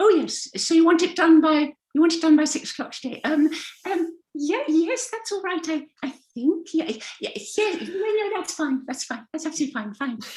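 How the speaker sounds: very high, over-eager, people-pleasing voice. Showing how some of us answer requests, in a people-pleasing voice. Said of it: "that wanting to please people voice".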